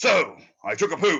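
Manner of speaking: mock overexcited narrator. Mocking a movie narrator's voice: imitating an overexcited narrator. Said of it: "He just sounds like".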